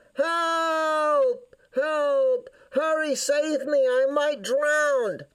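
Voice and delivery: desperate, high, drawn-out yelling. A character who has fallen in and can't get out yells for help. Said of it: "decided to yell even more".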